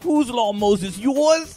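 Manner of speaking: loud, very high put-on New York accent. Quoting a line to Moses from the Ten Commandments movie, imitating a New York accent.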